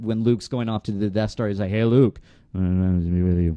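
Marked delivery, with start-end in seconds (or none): 1.7-3.6 words half swallowed, barely articulated, mumbled. Retelling how a friend played Han Solo: mumbling like Harrison Ford. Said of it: "he would mumble it because, like, Harrison Ford mumbled it".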